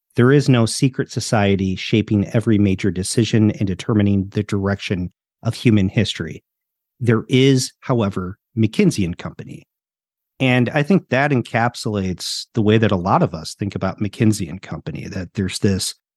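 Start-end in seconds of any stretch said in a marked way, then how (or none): none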